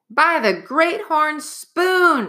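very high, cried-out exclamation. Narrator reads Jack's cry as he very nearly jumps a foot, yelling. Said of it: "he yelled".

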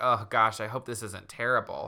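ordinary talk

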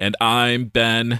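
robotic voice. Joking that a line gets replaced by a generated one: robot voice. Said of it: "Just a robot voice".

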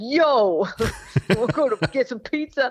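casual Brooklyn street accent. Explaining how you copy the accents you hear: imitating a Brooklyn accent. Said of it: "someone from Brooklyn".

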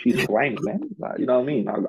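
fake Australian accent, sing-song and high. In a casual chat about slang, the speaker talks in a put-on Australian accent. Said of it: "I've got an Australian accent on".

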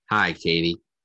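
dead-level, low monotone with no emotion at all. Critiquing another reader's line, the speaker demonstrates a flat monotone, no emotion. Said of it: "No emotion".

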